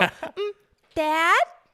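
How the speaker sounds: shrill, loud, high, squeaky dog character voice. Correcting the other speaker, then voicing the dog: Birdie voice. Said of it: "that's not how you say it".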